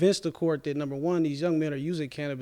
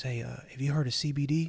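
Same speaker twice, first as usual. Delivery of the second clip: put-on whispering. Retelling what the anesthesiologist said before surgery: imitating someone whispering. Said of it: "he whispers in my ear".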